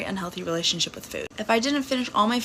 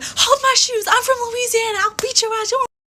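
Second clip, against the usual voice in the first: put-on screaming voice, higher pitch and louder; 7 dB louder than usual. Retelling a fight where another girl threatened the speaker: imitating someone screaming.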